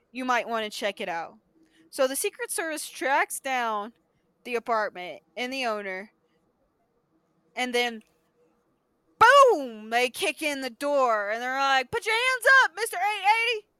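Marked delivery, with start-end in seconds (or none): 12.0-13.6 loud, very high, put-on country accent. Retelling Secret Service agents kicking in a door, in a country-accent agent voice. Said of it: "Why do you have that little country saying".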